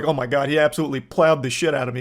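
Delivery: put-on in-character girl's voice. Mocking a story by acting out one of the girls: imitating one of the girls. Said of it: "the three girls he fucked come on and be like".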